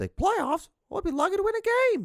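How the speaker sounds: animated, lilting, swooping put-on sing-song, rising. Speaker retells what a coach said at the time, imitating high-pitched voice. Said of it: "he had this high pitched voice".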